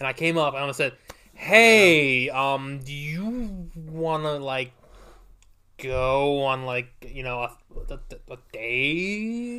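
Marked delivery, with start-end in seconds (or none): 1.3-9.6 mock halting, fumbling, awkward stammer, very slow. Retelling asking someone out at McDonald's: imitating his own awkward ask. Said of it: "it was super awkward".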